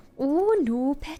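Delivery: put-on Welsh accent. Reacting to a skill description in a put-on Welsh accent. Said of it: "I'm going to have to talk like this".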